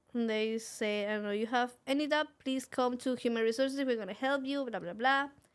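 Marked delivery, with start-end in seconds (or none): none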